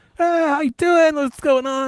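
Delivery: put-on jovial friendly tone. Recounting a dentist's tone during a checkup, imitating a jovial dentist. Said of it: "it goes from like jovial".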